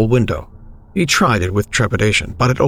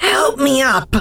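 very high, croaking, hoarse voice. Reading a story, a woman answers the man who asked if she was okay: croaking hoarsely. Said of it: "She croaked hoarsely".

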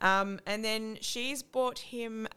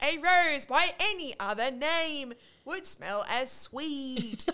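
mock loud yell delivered at a higher pitch; 6 semitones higher than usual. Retelling how he said it after being told to say it loud, retelling a yell. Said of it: "you've got to just like yell it and say it loud".

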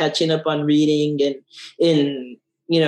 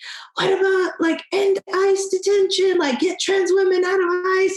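very high-pitched, loud, protesting yell. Recounting a woman at a dc pride celebration, retelling her yelling. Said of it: "she like started yelling like".

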